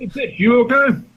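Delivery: put-on charming British accent. Showing how a woman might ask if you're okay; British accent. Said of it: "British accent".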